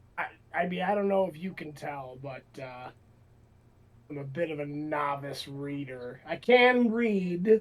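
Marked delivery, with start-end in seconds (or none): 6.3-7.6 very defensive tone, louder. Playing a character in a game who admits being a novice reader: said very defensively. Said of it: "he says that very defensively".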